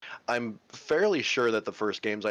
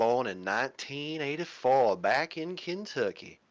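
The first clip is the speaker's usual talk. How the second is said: poor, fake put-on Southern drawl; 4 semitones higher than usual. Speaker tells a co-speaker where they were born, in a horrible put-on Southern accent. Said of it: "Forgive my horrible accent".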